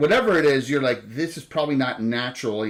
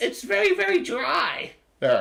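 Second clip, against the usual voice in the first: very high, rough, creaky critter voice with swoops. Playing a raccoon complaining that it's dry there, raccoon character voice. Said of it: "best raccoon voice".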